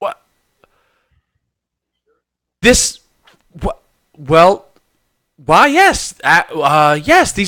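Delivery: very slow, dumbfounded, incredulous disbelief. A storyteller voicing a woman stopping outside the door at a crate, incredulous. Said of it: "she stares incredulously".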